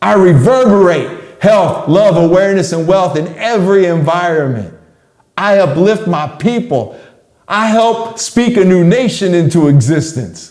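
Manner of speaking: animated, lively, spirited, full of zest. Demonstrating what having an animated spirit sounds like, animated and full of zest. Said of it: "that's the animated zest for life right there".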